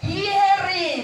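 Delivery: hearing stressed, punched high and loud.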